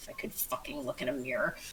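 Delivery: very quiet mumbled speech. Narrating a character's aside after his remark about the mirror, mumbling under his breath. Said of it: "mumbles under his breath".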